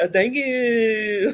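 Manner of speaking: very high, squeaky thank you with you held long. Retelling a wrestling segment, imitating Chad Gable's weird thank you. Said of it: "you say thank you weird".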